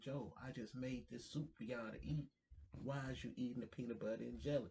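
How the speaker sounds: mock outraged, furious scolding tone. Retelling how a father scolded about eating a sandwich: imitating someone furious. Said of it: "He is beyond mad".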